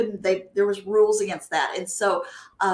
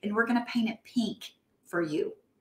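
put-on very soft voice; 6 dB quieter than usual. Recounting to Jill what a man said to the speaker, imitating a very soft voice. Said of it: "he had a very, very soft voice".

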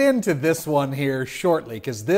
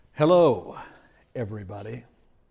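put-on eerie, unsettling, creepy voice; 5 semitones lower than usual. Redoing a greeting to viewers in a different way: put-on creepy greeting. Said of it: "'cause that wasn't creepy".

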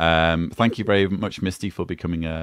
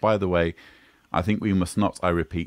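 ordinary delivery

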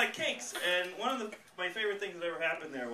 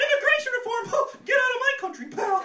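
put-on cartoon mouse voice, much higher, louder; 6 dB louder than usual. Imagining people saying terrible things, the speaker delivers a slogan in a Mickey Mouse voice. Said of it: "had a high pitched Mickey Mouse voice".

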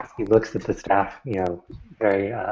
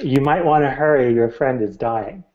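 big, resounding, booming wizard voice; 4 semitones higher, 4 dB louder than usual. While the players debate, the narrator speaks as the wizard: booming wizard voice. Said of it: "you hear the wizard's voice boom".

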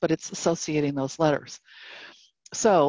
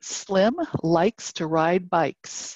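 very slow, each word said separately. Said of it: "you might dictate".

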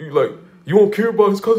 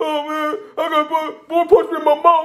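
put-on hysterical voice; 8 semitones higher than usual. Speaker acts out how he'd describe being punched, imitating a hysterical voice. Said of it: "the hysterical voice".

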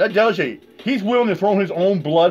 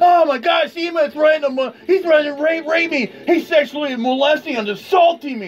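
mock screaming in a much higher woman's voice; 8 semitones higher than usual. Recounting what a woman said about him years ago: mocking Holly Wire screaming. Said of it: "she was screaming like".

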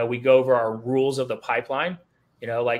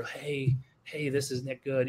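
scared, hesitant, slow and timid half-whisper; 7 dB quieter than usual. Imitating a nervous new caller making a first call: imitating a timid half-whisper. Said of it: "You're gonna probably whisper".

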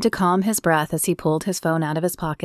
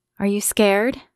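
shy, timid, meek, small-voiced; 3 semitones higher than usual. Narrator reads her question to Brody as her hand covers his, timid voice. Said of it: "She asked in a timid voice".

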